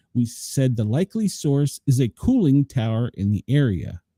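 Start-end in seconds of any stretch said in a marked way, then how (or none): none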